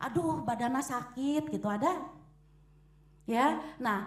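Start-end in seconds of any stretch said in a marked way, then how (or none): none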